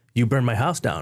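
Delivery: plain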